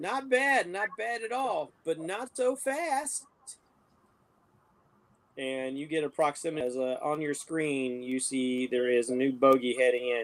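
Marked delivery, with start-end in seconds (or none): 0.0-3.2 slow, high, teasing, mocking, taunting jeer. Narrating a TIE fighter mission, a voice over the comms taunts you: mocking voice. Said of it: "you hear this mocking voice".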